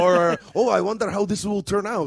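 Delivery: joking, horrible, fake put-on German accent. Joking about how the Nazis felt about Indiana Jones, in a horrible fake German accent. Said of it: "horrible accent, I know".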